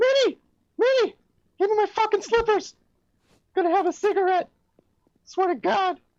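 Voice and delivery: very high-pitched cartoon mouse voice. Doing an impression of Mickey Mouse at home calling for slippers: Mickey Mouse voice. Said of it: "Mickey Mouse".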